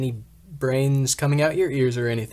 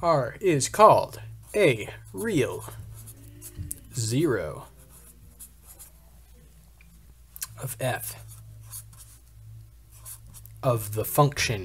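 robotic voice; 4 dB quieter than usual. Math lecturer reads a definition to the class in a robot voice. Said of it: "talk like a robot".

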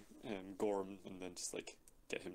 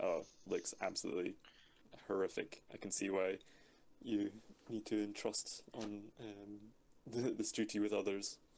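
usual speaking voice

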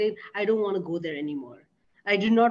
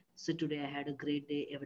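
low, flat, level, expressionless monotone; 6 semitones lower, 12 dB quieter than usual. Imitating monotonous clients describing their day: imitating a flat monotone. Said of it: "they're monotonous. They're like".

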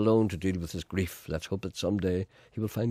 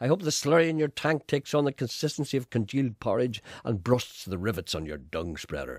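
ordinary talk, nothing marked

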